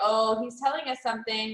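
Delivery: ordinary delivery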